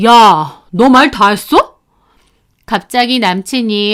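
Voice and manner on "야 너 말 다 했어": loud angry outburst, snapped. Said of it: "엄청 화난 목소리로".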